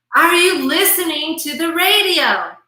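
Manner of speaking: escalating, loud, high-pitched yell. Retelling the husband calling a third time: imitating yelling even louder. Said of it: "finally he yells even louder".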